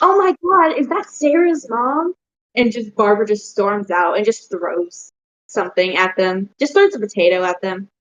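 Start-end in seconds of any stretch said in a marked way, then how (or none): 0.0-2.1 startled shout, very high and shrill. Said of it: "yelling outside".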